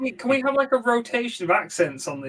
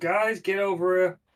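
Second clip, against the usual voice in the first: plain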